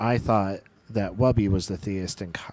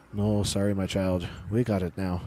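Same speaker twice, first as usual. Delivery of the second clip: put-on Irish priest voice with Irish accent.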